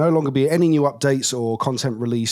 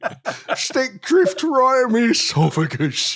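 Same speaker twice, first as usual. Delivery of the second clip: mock whiny complaining voice, higher; 11 semitones higher than usual. Mocking people on Twitter complaining after the show: imitating angry Twitter users. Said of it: "I don't know what this voice is".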